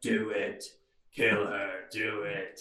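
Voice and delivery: menacing stock villain voice. Speaker retelling a voice heard in a dream, cliche evil voice. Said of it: "a cliche evil voice was like".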